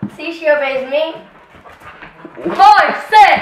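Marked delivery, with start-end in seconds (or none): 2.5-3.4 loud, high-pitched yelling. Commanding the dog to sit: yelling a command at a dog. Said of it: "You don't need to yell at her".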